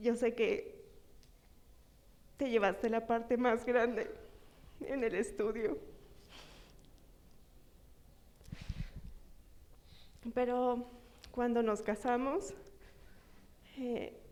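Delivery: voice breaking with emotion. Thanking her husband in front of others, voice breaking with emotion. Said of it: "perdón si se me corta, estoy muy emocionada".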